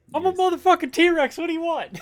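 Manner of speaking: very high, shrill yelling outburst. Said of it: "he's yelling".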